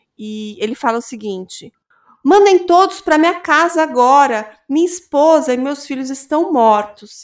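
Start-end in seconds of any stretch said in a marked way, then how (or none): 2.3-7.3 put-on, loud, frantic, desperate pleading. Retelling David's call to emergency services, imitating David's desperate panic. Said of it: "completamente desesperado".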